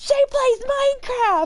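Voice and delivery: put-on high loud excited child voice.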